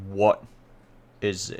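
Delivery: deep, powerful, commanding character voice. Retelling a scene, the speaker voices a figure answering a call, deep, powerful voice. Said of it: "a deep, powerful voice says".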